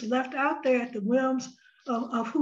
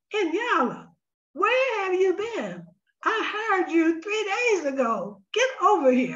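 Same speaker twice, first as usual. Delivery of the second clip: lively, high-pitched, swooping voice; 6 semitones higher than usual. Retelling a phone message from Bobby, who had just hired the speaker: Bobby's high-pitched voice. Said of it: "saying in that high pitched voice".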